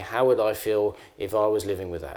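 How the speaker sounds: usual speaking voice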